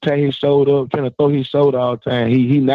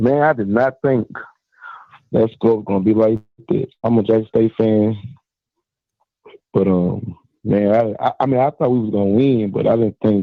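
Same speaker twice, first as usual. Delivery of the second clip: low, downbeat, disappointed, sad-sounding tone; 4 semitones lower than usual. A Jackson State fan calls the host after his team's win, sounding sad. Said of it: "Why you sound so sad".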